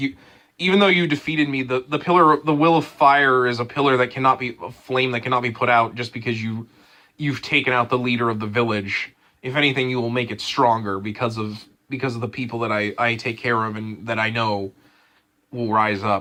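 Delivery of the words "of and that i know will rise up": ordinary talk, nothing marked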